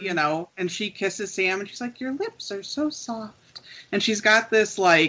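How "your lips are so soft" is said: put-on creepy, soft, high little girl voice. Recalling a scene where she kisses Sam: Lilith's little girl voice. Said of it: "she did that little girl voice".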